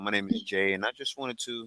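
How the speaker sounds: smooth, deep salesman voice. Showing how they sound pitching someone on the phone: smooth voice ten notches lower. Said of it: "I sound so smooth".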